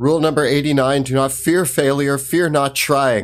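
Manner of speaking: proclaimed like a creed, rallying, called out. In a tabletop game, facing a scary room, Wilhelm yelling out. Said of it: "Wilhelm yells out".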